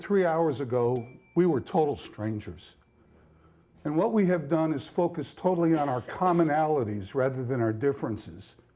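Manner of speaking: ordinary delivery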